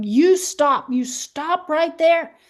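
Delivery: play-acted high yell. Retelling how a friend yelled at a man approaching her daughter: imitating someone yelling. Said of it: "started yelling at him".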